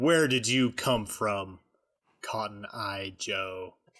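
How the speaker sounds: slow, threatening, menacing character voice. Glaring at an officer in character: menacing in-character line. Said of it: "I menacingly glare at the officer and say".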